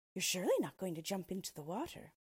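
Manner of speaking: ordinary delivery, nothing marked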